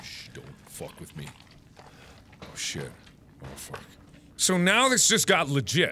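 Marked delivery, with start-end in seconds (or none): 0.0-3.8 very quiet, breathy whisper under the breath. Playing a game on stream right after a scare, speaking quietly.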